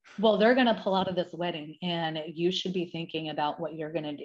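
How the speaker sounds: ordinary talk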